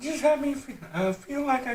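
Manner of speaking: cracking voice. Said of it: "I'm starting to get slowly a voice crack".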